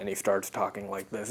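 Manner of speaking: low, soft voice dropped a couple octaves. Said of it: "drops his voice a couple of octaves".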